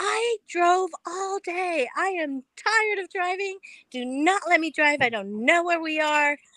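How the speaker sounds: high-pitched, complaining diva tantrum. Retelling getting out of the car after driving all day: imitating own diva tantrum. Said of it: "I'm throwing a tantrum now".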